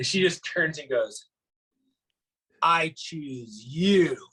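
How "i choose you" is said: slow, unhurried, drawn-out, spaced-out words. Retelling a passenger boarding a flight: imitating slow speech. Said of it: "real slow".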